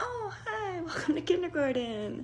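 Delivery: sugary, lilting sing-song, very high voice. Showing one of the voices every teacher develops: sweet sing-songy voice. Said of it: "there's the sweet sing-songy voice".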